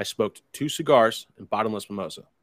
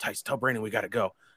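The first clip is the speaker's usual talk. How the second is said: acting annoyed, quieter; 5 dB quieter than usual. Quoting a man telling Tice it's time to go, retelling an annoyed remark. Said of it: "he just started getting real annoyed".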